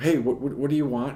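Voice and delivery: ordinary talk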